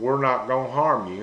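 ordinary delivery

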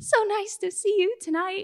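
voice going way up. Retelling greeting a relaxed man, voice going way up. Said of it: "Voice went way up".

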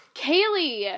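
stern, mean, loud, harsh-sounding voice. Retelling being called out while reading aloud: imitating Brother Joe sounding mean. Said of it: "I'm making him sound mean".

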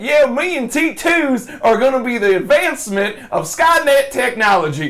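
put-on drawled Southern accent. Retelling a funny bonus scene with a dubbed character: imitating a Southern accent. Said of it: "dubbed with a Southern accent".

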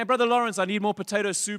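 high, loud shouted call.

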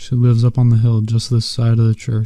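ordinary delivery

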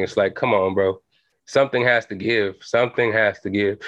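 ordinary delivery

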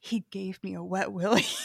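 imitated whisper. Retelling what she whispered to the group in the store, imitating a whisper. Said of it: "She whispers it".

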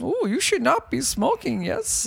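put-on squeaky high voice in an Indian accent. Joking about a scene with the Yoda character: Yoda with Indian accent. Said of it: "Yoda's an I-, Indian?".

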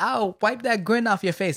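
cocky, utterly self-assured, loud and high. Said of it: "she says it with so much confidence".

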